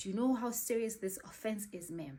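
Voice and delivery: put-on stern male voice. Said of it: "He was so stern".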